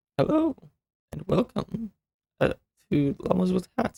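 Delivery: voice cracks partway through "hello". Host opening a Llamas with Hats video, voice cracks. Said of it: "as I have a voice crack".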